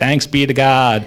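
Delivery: play-acted irritated, short, aggravated priest voice. Retelling how a priest used to say the line: imitating an annoyed priest. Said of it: "Why is he so mad about it?".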